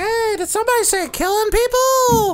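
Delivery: very high, squeaky, made-up character voice. Cutting into a role-play discussion about killing, in a put-on character voice. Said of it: "I'm doing the voice".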